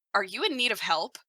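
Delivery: dim-witted, dopey, clueless-sounding delivery. Voicing a grumpy cleric meeting a stranger, asking dumbly. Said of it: "very dumbly ask".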